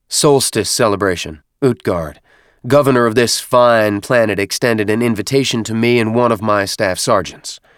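ordinary delivery

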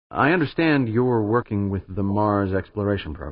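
plain

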